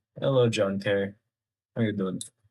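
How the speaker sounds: tired, weary voice. Greeting a viewer while playing a game with commentary, tired voice. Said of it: "if I sound tired, that's because I am".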